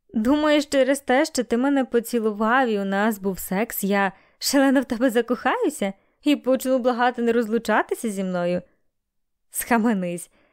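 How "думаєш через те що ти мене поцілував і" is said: plain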